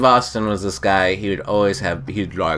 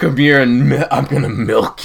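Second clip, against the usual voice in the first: put-on brute voice, higher; 5 semitones higher, 5 dB louder than usual. Acting out a made-up scene, voicing a woman who turns Hulkish: Hulk-like raging voice. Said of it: "she gets all like Hulkish".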